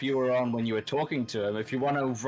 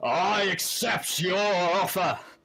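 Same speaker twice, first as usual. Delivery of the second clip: full in-character, raised, pitched-up shout; 7 semitones higher, 3 dB louder than usual. Voicing a character who accepts a challenge to fight: shouting as a character. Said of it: "shouts out".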